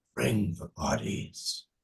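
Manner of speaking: eerie, hushed, whispered voice. A game master voices a voice heard inside a character's mind: whispered voice. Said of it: "a whispered voice".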